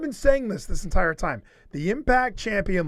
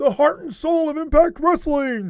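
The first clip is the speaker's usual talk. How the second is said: pitched-up wrestling commentator voice, TV style; 10 semitones higher, 4 dB louder than usual. Retelling a commentator selling a champion: Josh Matthews impression. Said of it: "the best Josh Matthews impression".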